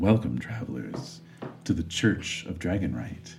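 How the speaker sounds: low, quiet, hushed voice. Voicing a character who welcomes travelers: Gillian Anderson voice. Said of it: "she says".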